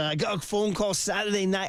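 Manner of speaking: rough attempted Scottish accent, words swallowed. Quoting a dad who flew out to join his son: attempted scottish accent. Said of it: "I can't do it".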